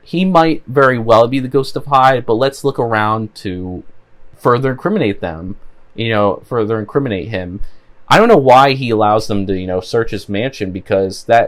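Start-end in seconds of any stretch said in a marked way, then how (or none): none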